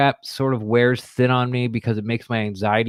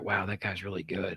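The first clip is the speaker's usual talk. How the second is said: put-on muttering, lower and quieter; 4 semitones lower, 14 dB quieter than usual. Acting out a coach praising a player where another can hear: pretend talking under breath. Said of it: "talk about Rojo under my breath".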